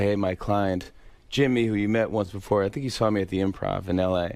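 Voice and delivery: ordinary talk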